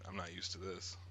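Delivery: ordinary talk, nothing marked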